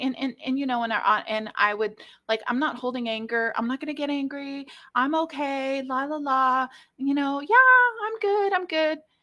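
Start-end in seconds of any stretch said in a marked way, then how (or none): 2.5-9.0 high-pitched, fake, breezy I'm-fine voice. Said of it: "convinced myself that I've forgiven this person".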